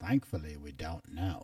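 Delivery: put-on British accent with an even, level delivery. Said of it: "in that British voice".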